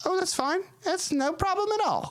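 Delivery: very high, tiny pixie voice.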